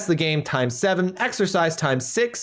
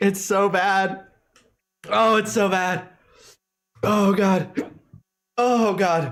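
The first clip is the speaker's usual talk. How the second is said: very slow, weepy crying through the words; 5 semitones higher than usual. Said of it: "I'm actually crying".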